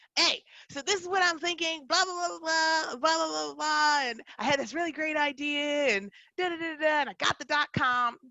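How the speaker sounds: put-on excited yelling. Retelling an excited call to an older sister: imitating own yelling into phone. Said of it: "yelling into the phone".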